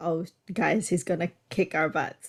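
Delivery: ordinary delivery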